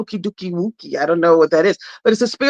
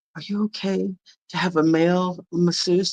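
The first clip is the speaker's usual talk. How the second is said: hushed, discreet half-whispered voice; 2 semitones lower, 6 dB quieter than usual. Speaker quotes what the manager half-whispered to her: retelling a half-whisper. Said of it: "she whispers to me".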